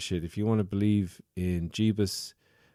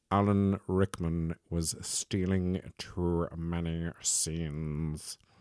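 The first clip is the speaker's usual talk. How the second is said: very slow, drawn-out, stretched drawl; 3 dB quieter than usual. Explaining why a scene was cut, in an Alan Rickman impression. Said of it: "in his best Alan Rickman impression".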